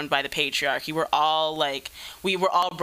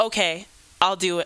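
mock snappy tone with attitude, pitched higher; 2 semitones higher than usual. Describing how abusive people answer when called out: mock snappy reply with attitude. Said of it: "like really snappy".

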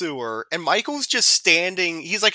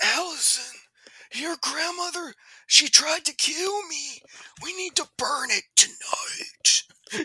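weird, very high-pitched half-whisper; 10 semitones higher than usual. Retelling a character's phone call to allison: imitating a half-whisper. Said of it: "whisper thing into the phone".

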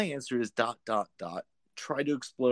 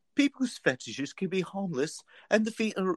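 put-on very high, elderly nanny-like old-lady voice; 9 semitones higher than usual. Reading out the professional's advice, Mrs. Doubtfire voice. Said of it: "Doubtfire my way through this".

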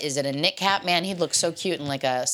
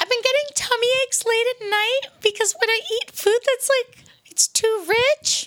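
highest possible, very high voice; 4 dB louder than usual. Challenged to describe an issue in their highest voice: very high voice. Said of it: "in your highest voice".

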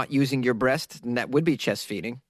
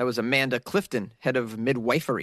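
ordinary delivery

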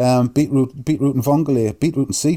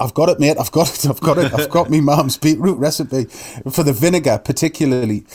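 plain

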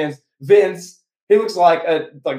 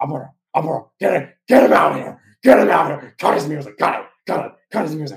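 put-on angry hushed voice. Retelling Vince at ringside after ripping off Lawler's headset; angry hushed tone. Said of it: "He's like in an angry hush tone".

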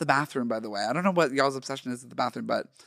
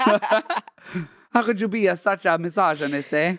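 pitched-up fake Italian accent, "eh" on the end; 5 semitones higher, 3 dB louder than usual. Improvising a scene in an auto body shop: put-on Italian accent. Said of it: "Italian is the accent".

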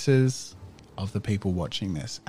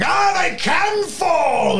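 very high, very slow, drawn-out shouted taunt; 8 dB louder than usual. Voicing a fighter looming over a fallen opponent: shouting to a crowd. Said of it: "he shouts out at the crowd".

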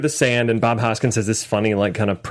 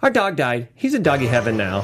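put-on nonchalant, casual kid voice. Retelling a niece answering the checkout lady: imitating a nonchalant kid. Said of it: "super nonchalant".

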